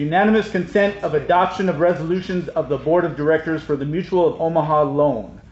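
speaking up.

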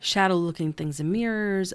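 plain

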